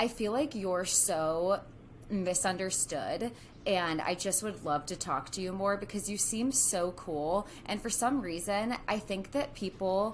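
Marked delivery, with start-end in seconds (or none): none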